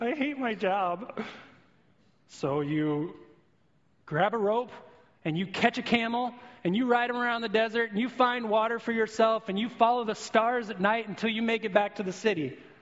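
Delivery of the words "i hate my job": very slow, tearful, blubbering sob. Acting out a tour guide who breaks down after a crash: imitating blubbering. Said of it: "he just starts blubbering, crying".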